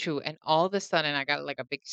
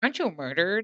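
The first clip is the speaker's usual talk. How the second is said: mock snide, negative tone; 2 semitones higher than usual. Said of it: "kind of a negative type of tone".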